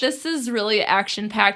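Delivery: ordinary talk, nothing marked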